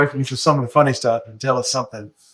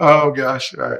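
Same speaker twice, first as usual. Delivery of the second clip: talking through laughter. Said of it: "I better stop laughing".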